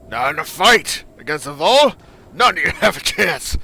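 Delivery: gruff, rough voice. Narrator reading a story aloud, voicing a male character's line; gruff character voice. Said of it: "I know it's gruff".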